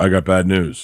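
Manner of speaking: put-on blunt delivery. Speaker acts out a fifties messenger telling a family about their son, imitating a blunt messenger. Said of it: "where he just walk up and he goes".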